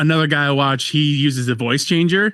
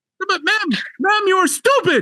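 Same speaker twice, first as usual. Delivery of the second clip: put-on scream, higher. Retelling a scammer screaming at a fake old lady: imitating someone screaming. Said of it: "screaming at him".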